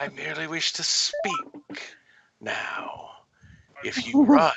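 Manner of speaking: whispered voice. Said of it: "you hear the whisper in your head again".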